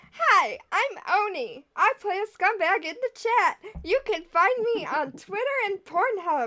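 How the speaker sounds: upbeat, chirpy, peppy, perky tone. Giving a character's sign-off intro as Oni: peppy Oni voice. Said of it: "I don't know why I made him so peppy".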